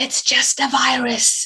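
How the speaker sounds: half-whispered aside, barely voiced. Recounting her replies to people's comments about her illness, retelling a whisper. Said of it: "I sort of whispered".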